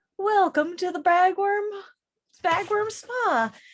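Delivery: sugary customer-service voice. Voicing a creature behind a spa counter greeting a traveler: sweet customer-service manner. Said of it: "with the sweetest, um, customer service smile and goes".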